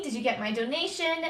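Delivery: ordinary delivery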